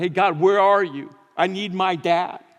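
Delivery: put-on anguished scream, crying out. Addressing the audience, acting out someone's cry: mock scream to God. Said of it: "and you screamed to God".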